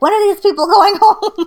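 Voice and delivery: shrill, very high, very loud yelling. Speaker recalling her mom yelling down the basement stairs, imitating mom yelling. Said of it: "She would like yell from the top of the basement stairs".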